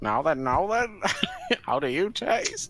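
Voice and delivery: slow, drawn-out showbiz drawl swooping up and down. Imitating the boss from an earlier game: Jimmy Savile voice. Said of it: "I voiced the boss with Jimmy Savile voice".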